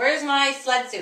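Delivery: loud, high-pitched yell, calling out. Retelling what he yelled from another room, yelling. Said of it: "he was yelling".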